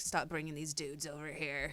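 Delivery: voice like a smoker. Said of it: "sound like a smoker".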